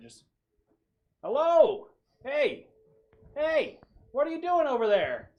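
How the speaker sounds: very loud, very high shout, muffled as through metal. Narrator voices a pro hero calling out from across the park: muffled voice inside metal helmet. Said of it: "this kind of muffled voice within uh, what sounds like a metallic helmet".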